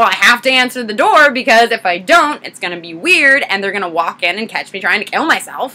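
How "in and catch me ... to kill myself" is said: normal talking voice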